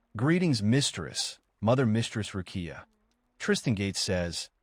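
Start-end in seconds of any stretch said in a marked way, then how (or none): none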